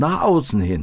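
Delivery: heavy stress on außen with a falling tune.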